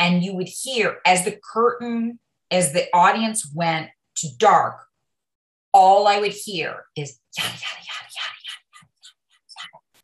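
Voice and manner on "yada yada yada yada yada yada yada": very soft whispered murmur. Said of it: "The entire audience whispering".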